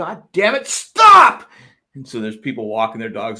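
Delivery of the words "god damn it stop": very loud, very high, dragged-out shrill holler. Retelling chasing a dog that won't come back: retelling own yell. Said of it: "But I'm yelling at".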